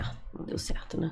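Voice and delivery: mock discouraged, dejected, almost whispered. Retelling own words after leaving a selection discouraged: retelling own discouraged words. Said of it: "Saí desanimada".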